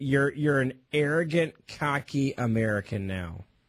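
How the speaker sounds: sarcastic voice dropping low in pitch. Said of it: "I'm being sarcastic".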